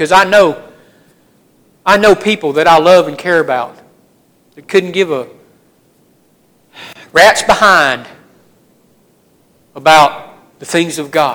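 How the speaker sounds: choked-up voice catching, breaking mid-phrase, halting. Speaking to listeners; choking up. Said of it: "I'm kind of choking up".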